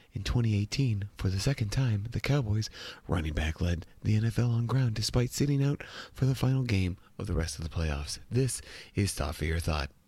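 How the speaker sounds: hushed, public-radio news-reader delivery. Reading someone's written piece aloud as if on the radio, NPR radio host voice. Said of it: "read one like we're on NPR".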